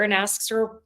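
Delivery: ordinary talk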